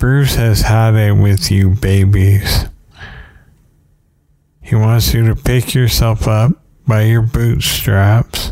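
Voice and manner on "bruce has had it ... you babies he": usual speaking voice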